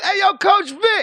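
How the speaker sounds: high, drawn-out, put-on shout carrying across distance. Acting out someone calling across to a friend: imitating someone shouting. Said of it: "somebody shouted".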